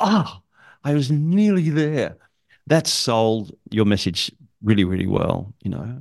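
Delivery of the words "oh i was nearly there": exasperated, let-down, pitched up and slow. Showing how to get frustration across in a message, frustrated. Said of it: "if it's frustration, you go".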